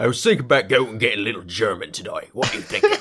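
put-on Cockney-accented British voice. Speaker imagining two guys talking back and forth, Cockney British accent. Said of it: "two guys with Cockney British accents talking back".

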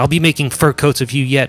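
shouting. Narrating a woman up a tree calling down to wolves, yelling. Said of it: "she yells out".

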